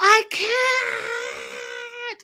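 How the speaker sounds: very high guttural shriek from the throat. Telling Abby what happened, imitating Jenny's guttural scream. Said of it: "like a very guttural scream".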